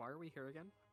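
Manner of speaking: whispered aside in character voice. Leaning in to ask a companion quietly during a trade: whispering in character. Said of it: "lean in and whisper to Topatticus".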